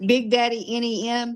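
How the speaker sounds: ordinary talk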